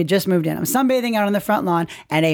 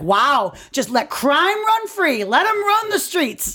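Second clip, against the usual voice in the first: high, rising yell; 7 semitones higher than usual. Retelling an argument where a man yelled at the speaker, retelling someone yelling. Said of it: "He's yelling this at me".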